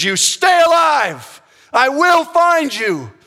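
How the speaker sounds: very high, loud, stretched-out, drawn-out scream. Retelling a movie scene where a character leaves someone in a cave: imitating someone screaming. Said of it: "He screams".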